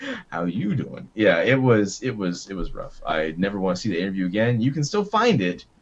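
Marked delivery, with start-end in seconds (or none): 0.3-1.1 smooth, flirtatious, charming delivery. Agreeing and repeating the pickup line: Joey from Friends impression. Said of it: "or Joey from Friends".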